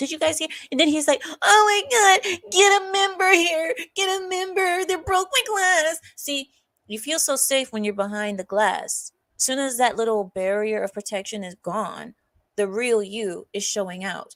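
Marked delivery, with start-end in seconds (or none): 1.4-6.0 very high, almost womanly voice. Retelling the driver's words after the window broke: imitating an almost womanly voice. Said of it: "I heard almost a womanly voice coming from that man".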